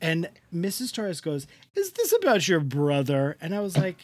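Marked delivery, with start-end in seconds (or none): 1.7-3.4 swooping, sing-song voice with wide pitch swings. Retelling a scene, imitating how the mother asks: Missus Torres impression. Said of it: "That is how she says it".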